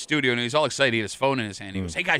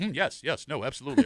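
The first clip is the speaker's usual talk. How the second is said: put-on forced calm voice, quieter; 5 dB quieter than usual. Retelling a meeting where they feared being fired: imitating Tommy's forced calm. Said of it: "when Tommy gets calm, he's terrified".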